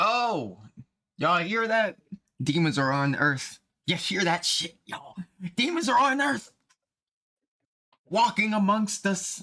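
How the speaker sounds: over-the-top, dramatic, very high proclaiming. Speaker calling out to y'all about a claim they read, dramatic, emphatic exclaiming. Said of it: "I'm just emphasizing it and being dramatic".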